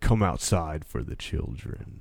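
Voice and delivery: imitated distorted phone voice. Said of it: "the voice on the phone started to distort".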